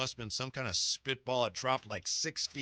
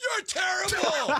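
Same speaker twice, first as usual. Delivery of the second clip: very loud, very high, shrill screeching; 9 dB louder than usual. Telling his interviewer about getting heckled, retelling a heckler's scream. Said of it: "screaming at me".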